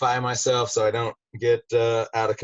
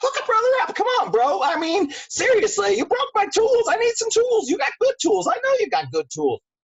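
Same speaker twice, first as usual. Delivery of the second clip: bright, bouncy, very high chipper halfling voice. Role-playing a halfling asking someone for thieves' tools; chipper halfling voice. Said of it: "so very chipper".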